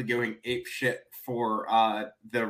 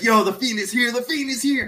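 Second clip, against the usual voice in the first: put-on very high, wild, frantic hyped outburst; 11 semitones higher, 3 dB louder than usual. Retelling how a fan nearby reacted when the lights went out: imitating a guy freaking out. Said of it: "started going ape shit".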